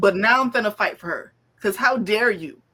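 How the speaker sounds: mock angry, mad and fired-up. Retelling own reaction while reading the book: imitating own angry reaction. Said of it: "I got mad".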